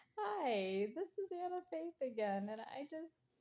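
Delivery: words bubbling with laughter. Speaker introduces herself again in a video she is posting, laughing while talking. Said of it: "I'm just laughing".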